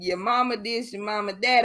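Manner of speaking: ordinary talk, nothing marked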